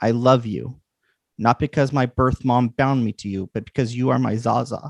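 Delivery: tearful, sobbing words said through tears. Narrating Lily's words as she is held to the listener's chest, speaking through tears. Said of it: "she says through the tears".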